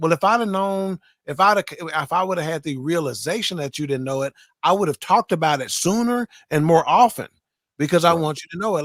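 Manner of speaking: ordinary talk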